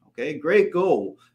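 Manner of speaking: ironic, sarcastic tone, not meant. Responding to a vague goal of just making money: sarcastic. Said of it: "now I'm being sarcastic".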